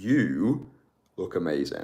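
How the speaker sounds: heavy emphasis on the word you. Showing how she compliments someone to camera, with emphasis on the word you. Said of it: "I like to put emphasis on the word you as well".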